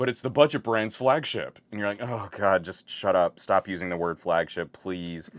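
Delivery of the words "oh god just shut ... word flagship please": usual speaking voice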